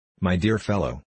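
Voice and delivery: ordinary delivery, nothing marked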